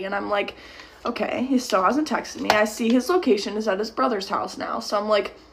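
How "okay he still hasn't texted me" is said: usual speaking voice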